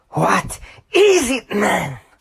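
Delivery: very high, shifted voice swooping wildly. Showing a quick Ren Hoek impersonation before pitch shifting it: Ren Hoek impression. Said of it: "My horrible Ren Hoek impression".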